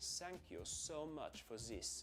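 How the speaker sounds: German accent, th sound replaced with hissy sound. Trying out the german substitute for the th sound: german accent. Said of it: "That's thank you instead of thank you".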